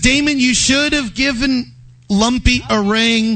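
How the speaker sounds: plain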